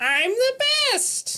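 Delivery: very high-pitched video-game character voice. Quoting a video game character's line: Toad voice. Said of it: "Toad has the line".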